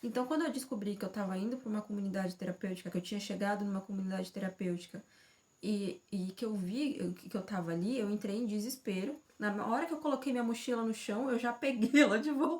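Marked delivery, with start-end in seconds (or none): 9.4-12.6 speaking while laughing through the words. Telling about arriving at a therapeutic community, laughing while talking. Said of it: "Eu tô rindo agora".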